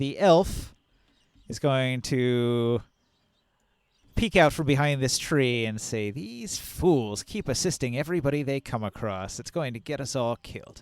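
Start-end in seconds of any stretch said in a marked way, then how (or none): 6.1-10.8 private half-whisper under the breath. An elf peeks out from behind a tree, half-whispering to herself. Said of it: "She whispers it to herself".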